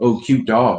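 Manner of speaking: sarcastic, teasing, mocking tone. Retelling what a kid on a scooter said: imitating a mocking tone. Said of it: "he was, like, mocking me".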